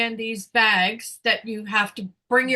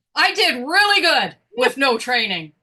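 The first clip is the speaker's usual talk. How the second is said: put-on excited shout, swooping, yelled out; 3 semitones higher, 3 dB louder than usual. Retelling answering a self-checkout machine's question out loud: retelling a scream. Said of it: "I screamed".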